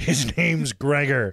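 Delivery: put-on barked, slurred, drunk-sounding Scottish accent. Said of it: "not quite Scottish enough, but it works".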